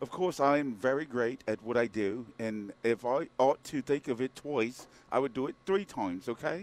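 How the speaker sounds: attempted put-on British accent. Asked to do one, the speaker gives an attempted British accent. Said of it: "Can you do a British accent?".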